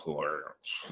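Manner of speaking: breathy, breathed-out put-on voice. Retelling how someone suddenly slips into a voice, say the name in Sam Elliott voice. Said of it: "just goes into like Sam Elliott voice".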